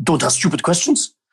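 frustrated, fed-up, dismissive brush-off. Retell the footballer's answer to your good friend in the mix zone, as a frustrated Thierry Henry impersonation. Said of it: "That's my best impersonation".

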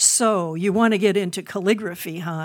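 gruff, growling, grumbling voice. Recalling the professor putting his pen down and speaking to him: growling like Professor Reynolds. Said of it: "he growled at me".

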